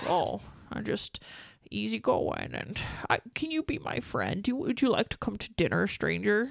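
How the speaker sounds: put-on mumbly movie-star voice. Doing an impression of an actor's talk: mumbling Jimmy Stewart impression. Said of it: "That's actually not a bad impression".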